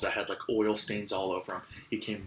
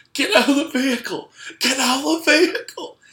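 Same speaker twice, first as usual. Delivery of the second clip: mock sobbing, very shrill, very high and loud; 12 dB louder than usual. Retelling what a man told you while he started crying: imitating someone crying. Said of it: "And he's like starting to cry now".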